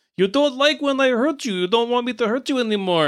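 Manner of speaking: put-on Russian accent. Retelling a story where a villain speaks to Santa, Russian accent. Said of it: "the evil dude is just Russian".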